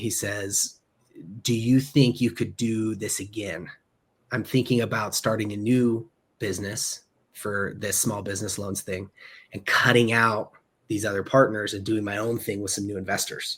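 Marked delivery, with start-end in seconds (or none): 1.4-13.6 quiet, confiding, scheming, conspiratorial voice. Retelling what a boss said privately in a meeting: imitating a conspiratorial tone. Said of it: "almost conspiratorially".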